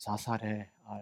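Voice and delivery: low, solemn voice. Reading out an ai chatbot's reply to a user, in a low, solemn voice. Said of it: "낮고 엄숙한 목소리".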